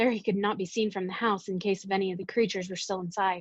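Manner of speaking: plain reading voice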